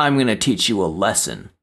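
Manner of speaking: sing-song, taunting fourth-grade schoolyard bully voice. Explaining what a bully says, speaker acts it out: fourth-grade bully voice. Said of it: "you sounded like a fourth grade bully right there".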